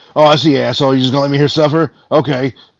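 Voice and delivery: suffering game character voice in pain. Retelling how a game character reacts when the player walks away: imitating a game character left to suffer. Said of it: "and he's like".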